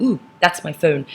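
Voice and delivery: ordinary talk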